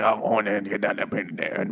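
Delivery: put-on impenetrable Cajun accent. Retelling a story, quoting a guy who bullies a boy, in an impenetrable cajun accent. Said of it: "sometimes impenetrable Cajun accent".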